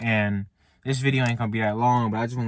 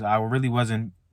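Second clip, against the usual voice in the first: ordinary delivery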